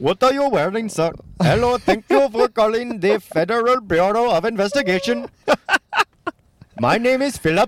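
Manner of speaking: put-on Indian accent, very high pitch. Imitating an agent answering a phone call: put-on Indian accent. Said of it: "like, an Indian guy".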